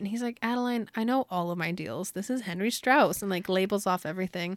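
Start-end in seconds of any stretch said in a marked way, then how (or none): none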